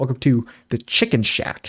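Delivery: hyper, amped, highly energetic delivery. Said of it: "consistent way of delivering the lines".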